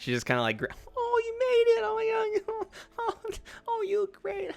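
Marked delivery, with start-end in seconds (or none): 1.0-4.5 very high, fake-sweet, fake-nice friendliness. Voicing a character greeting guests with a fake nice face: fake nice greeting. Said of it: "fake face".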